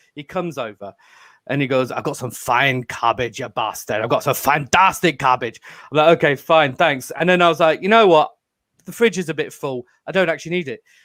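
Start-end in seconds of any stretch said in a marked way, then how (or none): 1.9-5.6 furious, low, put-on Scottish accent. Retelling a friend pushing his cabbage on the speaker, imitating an angry Scotsman. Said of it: "he's a very angry Scotsman".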